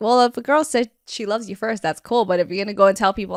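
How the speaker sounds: ordinary delivery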